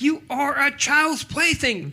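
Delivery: play-acted furious, angry yell, very high. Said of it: "he's yelling at, at Buzz".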